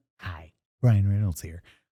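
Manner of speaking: weird quiet put-on voice. Greeting as Ryan Reynolds after the other speaker names the voice: Ryan Reynolds weird quiet voice. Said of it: "it's like his weird quiet voice".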